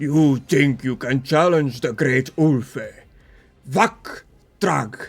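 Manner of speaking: heavy, loud, booming giant voice. Game master voicing a figure who speaks in Giant to the players, booming deep heavy voice. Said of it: "he booms out in a uh, in a deep, heavy voice".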